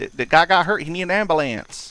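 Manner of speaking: put-on Southern accent. Acting out a 911 call, the speaker voices the caller: thick accent. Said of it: "the guy's doing the voice with the thick accent".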